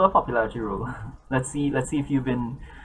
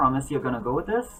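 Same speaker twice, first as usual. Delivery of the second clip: plain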